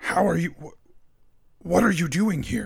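almost confused, slightly puzzled. A game master voices a shadowy figure in the darkness, almost confused. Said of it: "It sounds almost confused when it says".

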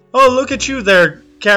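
put-on, attempted, fake female character voice. During a scene, the speaker tries to voice a character in a put-on female voice. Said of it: "I'm trying to do a female voice".

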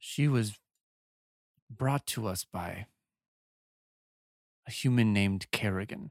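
speaking through grinding, clenched teeth. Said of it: "You can hear [name]'s teeth, like, grinding as he says that".

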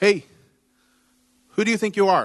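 offended, huffy, indignant, put-out delivery. Acting out the woman's reply from her perspective: imitating an indignant attitude. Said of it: "is her attitude".

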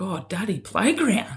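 put-on small girl's soft voice. Retelling what the little daughter says on a walk: imitating Isla. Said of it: "she's a clever little girl, and it's like".

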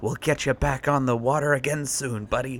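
hushed, soft half-whisper. Player's character taps the buddy in their pocket and half-whispers to it. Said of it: "and I whisper".

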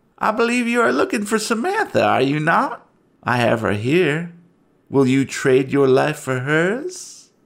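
gleeful, gloating, taunting voice with "hers" drawn out. A narrator voices an unseen figure calling out from deeper within: gleeful, mocking voice. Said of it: "a gleeful voice calls out, almost mockingly".

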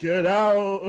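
eerie, spooky put-on ghost voice, high and loud. Retelling what a woman told her on arrival, in a ghost voice. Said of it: "she said it like a ghost".

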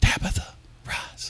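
soft, gentle, hushed whisper. Reading a Bible line as Jesus said it: imitating Jesus whispering. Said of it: "I like what Jesus whispered".

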